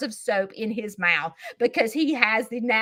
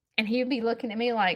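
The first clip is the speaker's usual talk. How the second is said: ordinary talk, nothing marked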